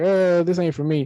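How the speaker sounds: ordinary delivery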